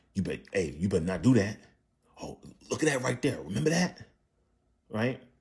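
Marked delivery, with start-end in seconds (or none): 0.1-4.0 pressing, insistent, urgent tone. Showing what it sounds like when saying something urgent: urgent. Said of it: "when I say urgent, like".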